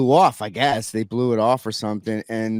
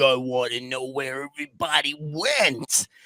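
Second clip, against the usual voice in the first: put-on angry wrestler voice, quieter; 5 dB quieter than usual. Telling a story and quoting Macho Man when he was pissed: mock-pissed Macho Man demand. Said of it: "Savage is is like pissed".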